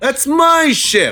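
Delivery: defiant shouted character voice. Asked to voice the character defiantly, performing Brock Stark: defiant Brock Stark voice. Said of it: "in your best Brock Stark voice? Defiantly".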